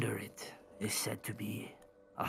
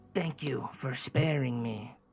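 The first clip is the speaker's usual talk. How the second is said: loud delivery, dripping with sarcasm; 2 semitones higher, 5 dB louder than usual. Speaking in character, thanking someone for sparing her: sarcastic. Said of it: "she says sarcastically".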